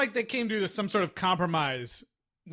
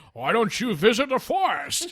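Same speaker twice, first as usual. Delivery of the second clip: slow, deliberate, weighty, unhurried delivery; 4 semitones higher, 4 dB louder than usual. Retelling a movie scene: Sean Connery impression. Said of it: "I just wanna hear more of this impression".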